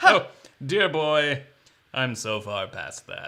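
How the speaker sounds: loud, slow, snooty, superior, condescending drawl. Acting out a bourbon snob scoffing at a beginner: mock condescending tone. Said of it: "And that's condescending".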